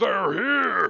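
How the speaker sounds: sudden, high, loud shouted yell. As a bugbear popping his head around the corner, yelling out in Goblin. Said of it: "And yells out".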